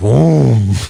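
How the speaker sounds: loud, guttural yell, drawn out from the throat. Imitating how a character says a word: deep guttural Ric Flair voice. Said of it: "deep guttural, like, Ric Flair".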